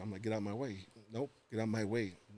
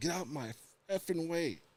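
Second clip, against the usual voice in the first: mock furious, high-pitched, angry shouted yell; 7 semitones higher than usual. Speaker recounts yelling at a pastor who would not budge, retelling a yell. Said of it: "And I yelled at him".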